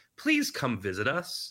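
normal talking voice

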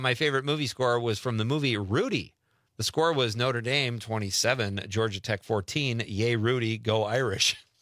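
ordinary talk

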